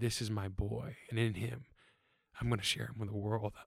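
warm, fatherly voice. The speaker recalls hearing God speak of him, not booming: fatherly voice. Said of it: "I heard it in such a fatherly way".

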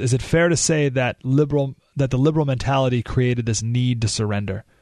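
usual speaking voice

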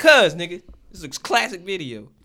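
heated yell. Arguing with someone who asked why they're cursing: yelling. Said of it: "Why are you yelling?".

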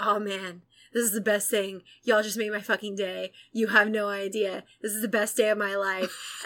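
put-on speech broken up by laughs. Retelling a man's reaction on a radio show, imitating laughing speech. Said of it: "he just starts, like, laughing and he's like".

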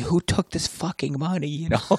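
very high, sobbing, tearful, acted-out crying. Retelling what a sixth-grade teacher said about missing money: imitating someone crying. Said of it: "she starts crying and saying".

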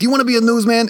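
put-on gruff, grizzled voice. Retelling how a former teacher, a grizzled newsman, spoke: imitating James Brodell's grizzled newsman voice.

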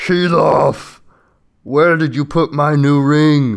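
very loud, booming, thundering giant shout. Narrator voices a giant calling from far off to Kilov, booming shouting giant voice. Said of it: "you hear a booming voice shouts".

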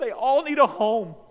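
sobbing, very high, loud and drawn out. Retelling his dad watching a sad pet commercial: imitating his dad crying. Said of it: "as he's crying".

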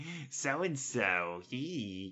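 soft, hushed, tattling tone. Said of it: "I've been like".

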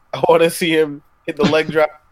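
usual speaking voice

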